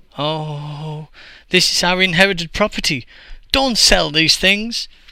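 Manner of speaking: high, dismayed shout with drawn-out "oh". Two brothers protest as their inherited property is sold, shouting unhappily. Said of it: "shouted unhappily".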